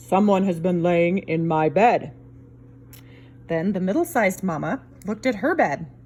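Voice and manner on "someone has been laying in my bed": great big, deep, low voice. Reading the three bears story, Papa Bear looks at his bed: Papa Bear's great big voice. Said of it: "in his great big voice".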